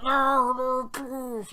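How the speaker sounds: faint, distant, very high, terrified begging. Redoing the distant captive's cry more faintly: faint terrified plea. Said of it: "it's pretty faint".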